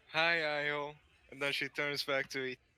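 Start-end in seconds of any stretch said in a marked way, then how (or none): 0.1-0.9 dejected, gloomy put-on voice. Tabletop player voicing a character greeting a party member, in a depressed voice. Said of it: "go with a depressed voice".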